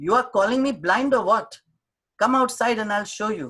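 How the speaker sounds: shouting, high and heated. Retelling an argument with a shopman over defective soap, retelling the shopman's shouting. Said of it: "Now he's shouting".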